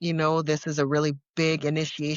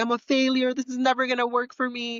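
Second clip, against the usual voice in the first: play-acted crying through every word, high sobbing wail; 8 semitones higher than usual. Retelling a phone call to a friend after relapsing: imitating own past crying. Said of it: "crying and sobbing and telling her".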